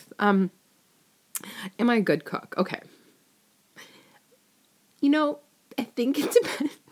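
laughing through words. Answering a question aloud while recording, laughing while talking. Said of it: "Sorry, I'm laughing".

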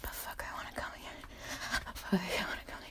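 breathless, fast, soft, urgent whisper.

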